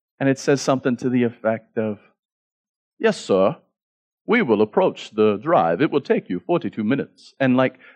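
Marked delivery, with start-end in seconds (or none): 3.0-7.3 put-on, proper, posh English gentleman's accent. Retelling what the car's navigation voice said after the destination was entered, in an English gentleman's voice. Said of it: "an English gentleman's voice comes on".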